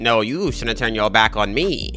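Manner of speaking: slow cartoon villain voice. Retelling what he says to Mufasa, in Scar voice. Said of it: "I don't know why I made that voice".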